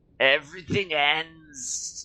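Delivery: high-pitched, wheezy voice of a strange figure. Voicing a figure's line while narrating: wheezing voice. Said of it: "the figure wheezes".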